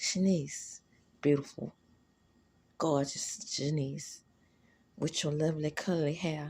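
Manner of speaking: smooth-talking charmer, low, smooth, sweet-talking delivery. Smooth-talking someone with compliments: low, smooth tone. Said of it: "with a low tone and smooth as I can make it".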